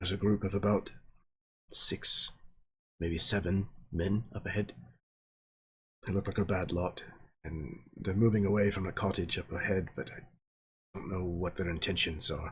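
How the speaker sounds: hushed tone, kept very quiet and soft. Voicing a character speaking to the player in Elven, in a very quiet hushed tone. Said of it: "in a very quiet, um, hushed tone".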